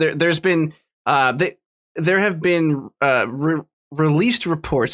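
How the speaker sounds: halting, stuttering start. A speaker discussing Cyberpunk 2077's release, stuttering. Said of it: "Sorry for stuttering there".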